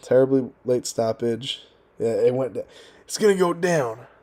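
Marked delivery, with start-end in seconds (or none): 3.0-4.0 delivery cut off, then restarted. Imitating a fighter after recalling a late stoppage: Bobby Green impression. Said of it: "That's my Bobby Green impression".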